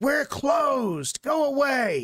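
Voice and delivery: shrill, very high, loud shout. In a tabletop game, the game master voices a familiar character yelling at Kiki Star: loud yell. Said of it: "a loud, familiar voice yells out".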